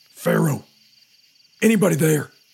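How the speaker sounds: rough, gruff whisper, pushed as loud as possible. Henry, hurt on a swamp shore, calls out for anybody, gruff loud whisper. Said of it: "as loud as he could in a gruff whisper".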